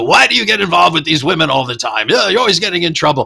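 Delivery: high-pitched, scolding yell. Retelling a movie scene where one character yells at another: imitating Bud yelling. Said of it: "Bud is yelling at him as usual".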